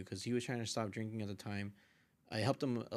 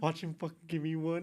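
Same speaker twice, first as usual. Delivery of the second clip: acted-out, high, scared, freaked-out panic; 8 semitones higher, 4 dB louder than usual. Retelling waiting for the cup: retelling own freaked-out words. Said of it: "then I started getting freaked out".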